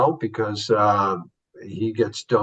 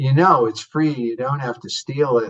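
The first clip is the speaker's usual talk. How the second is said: put-on laid-on, snotty New York accent; 4 semitones higher, 4 dB louder than usual. Retelling a film scene where a man shoves food into his pocket, Viva's snotty New York accent. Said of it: "in this really snotty New York accent".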